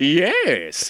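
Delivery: put-on cartoon character voice, yes drawn out. Telling a habitual bit, the speaker says yes in a cartoon character voice. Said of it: "say yes in his voice".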